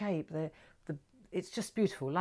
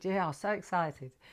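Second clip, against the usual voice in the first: put-on sarcastic tone. Retelling a birthday phone call with Dad: imitating dad's sarcastic tone. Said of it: "He's so sarcastic".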